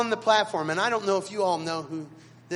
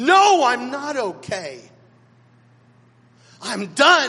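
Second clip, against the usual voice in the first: put-on desperate, swooping raised voice; 4 semitones higher, 7 dB louder than usual. Recalling finding Dad at his desk, retelling Dad's answer in a desperate voice. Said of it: "in this desperate voice said".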